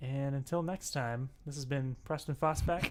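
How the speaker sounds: sad, glum, downcast tone. Signing off the episode, in a sad voice. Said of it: "And you sound so sad".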